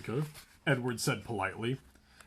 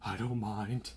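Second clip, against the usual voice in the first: soft, faint, barely-there hushed voice; 3 dB quieter than usual. A first-person narrator reading the reply she gave, in a faint, hushed voice. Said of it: "I said in a faint, hushed voice".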